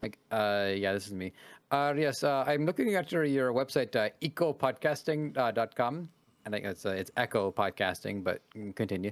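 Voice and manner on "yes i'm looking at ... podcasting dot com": halting, hesitant telemarketer-style phone voice. Retelling a phone call, imitating a scam caller. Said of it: "I was doing the impression".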